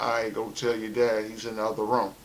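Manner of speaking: normal talking voice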